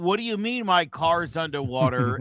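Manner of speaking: plain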